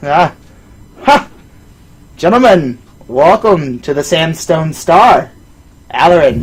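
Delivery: big, booming voice. Narrator voices a large man greeting the gentlemen from behind: big voice. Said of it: "a big voice".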